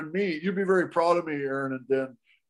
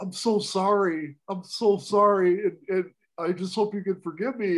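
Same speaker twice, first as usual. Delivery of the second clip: imitated crying, tearful voice; 3 semitones higher than usual. Retelling a man's apology to the woman he had hated: imitating someone crying. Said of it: "he just starts crying again".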